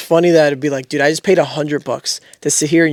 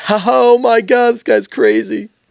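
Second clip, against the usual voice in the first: put-on high, slow laughing through every word; 8 semitones higher than usual. Retelling how an annoying audience member laughed at a non-joke: imitating someone laughing. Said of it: "laughing at everything".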